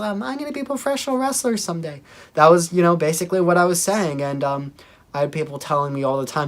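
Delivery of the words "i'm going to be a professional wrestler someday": tiny, wee, very high kitten-like voice. Recalling what they said back in fifth grade, in a little kitty voice. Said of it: "my little kitty voice".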